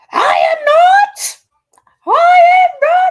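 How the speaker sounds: shrill, very loud, stretched-out, very high shriek. Retelling how a bitter old lady screams a denial: imitating someone screaming. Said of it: "And screaming".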